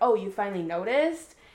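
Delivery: mock cheeky, sassy, pointed tone. Retelling a book heroine's reply to her husband: imitating a sassy retort. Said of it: "trying to be all sassy and stuff".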